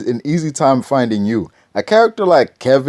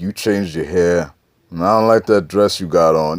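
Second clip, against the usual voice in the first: put-on mob-movie-style voice, lower pitch; 7 semitones lower than usual. Retelling how a movie character talks to a girl, imitating a mob movie character. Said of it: "like something out of a mob movie".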